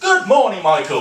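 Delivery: bright, chirpy, very cheery voice. Retelling greeting an old man at the old people's home, in a cheery work voice. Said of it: "I said in my most cheery work voice".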